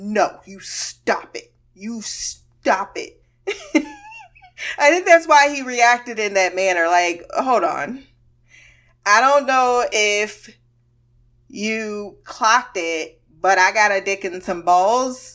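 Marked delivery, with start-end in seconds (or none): 0.0-3.2 slow, stern, scolding put-on motherly voice. Retelling how she was talking to him, in a put-on mom voice. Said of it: "it was a little bit of a mom voice".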